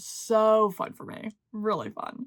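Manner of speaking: slow tone that sounds sarcastic. Speaker telling listeners about a vacation coming up soon, sounding sarcastic. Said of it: "I sound sarcastic".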